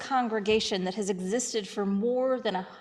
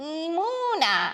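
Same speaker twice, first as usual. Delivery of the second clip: put-on high, drawn-out baby donkey bray; 6 semitones higher than usual. Showing how the hebrew word for faith should sound: braying like a baby donkey. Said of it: "so it sounds like that".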